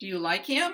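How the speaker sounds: rising intonation on "him" at the end. Teaching yes-no question intonation: rising intonation on him. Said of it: "We just go up at the end".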